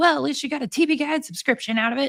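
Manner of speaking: irritated, pissed-off sarcasm. Recounting an email a man wrote while angry at her, retelling a pissed-off remark. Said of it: "he was all pissed off at her".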